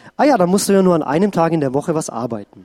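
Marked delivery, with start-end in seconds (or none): none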